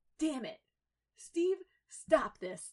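sudden, very loud, high outburst. Tony speaks to steve on the other side of the pool: bursting out. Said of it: "Tony burst out with".

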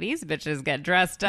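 normal talking voice

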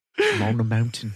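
put-on British accent. Repeating a celebrity's words after the other speaker quoted them: Orlando Bloom British accent. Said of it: "In his British accent?".

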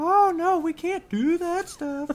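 very high, squeaky character voice, a bit loud. Speaker shows how a show character talks, in Missy's high-pitched voice. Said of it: "Missy's voice is really high pitched".

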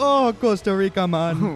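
put-on Jamaican accent, loud, slow and very drawn out. Joking about coming back from costa rica: put-on jamaican accent. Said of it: "you come back with a Jamaican accent".

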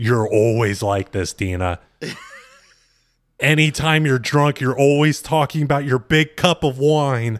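heavily exaggerated scolding tone. Retelling a reality show scene, exaggerating: imitating J wow scolding. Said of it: "where J wow was like".

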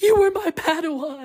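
pained, tormented, high-pitched anguished cry. Retelling what a boy said in a pretend lightsaber death scene, imitating an anguished voice. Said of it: "he said in a very anguished voice".

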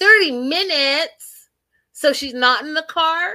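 very high, loud, sassy tone with attitude. Retelling his reply to the family, imitating him with attitude. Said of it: "With attitude".

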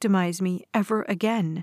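ordinary delivery

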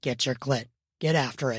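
very low growling voice. Narrator reads the man giving her an instruction, growling. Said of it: "He instructed with a growl".

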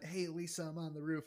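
soft, hushed voice.

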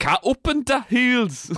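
put-on Yorkshire accent. Imitating a guy's accent, which comes out as a Yorkshire-sounding accent. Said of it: "that's Yorkshire, mate".

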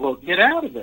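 put-on Virginia accent. Retelling what Billy said to Phil stuck in a hole: Virginia accent. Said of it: "in his, uh, Virginia accent".

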